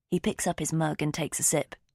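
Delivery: plain reading voice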